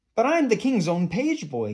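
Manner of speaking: very high, swooping gasp of disbelief. Eric protests after Lord Droon orders him away from the castle, gasping. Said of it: "gasped Eric".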